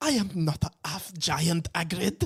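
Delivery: put-on offended, indignant tone in a French accent. Retelling a scene where she answers Hagrid, in a Madame Maxime French impression. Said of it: "it was a good French impression".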